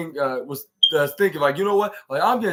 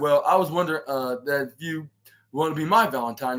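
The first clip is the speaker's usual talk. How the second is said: ordinary talk, nothing marked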